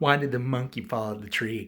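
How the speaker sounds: plain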